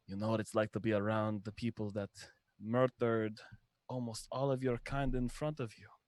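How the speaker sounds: hushed whisper. Speaking behind an enemy while casting a spell at him: whispering. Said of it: "I whisper behind him and I say".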